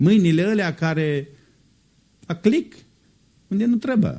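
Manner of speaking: accent from Transylvania. Reading a Bible verse aloud, the speaker adds a joke in a put-on Transylvanian accent. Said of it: "Asta a fost accent ardelenesc, intenționat".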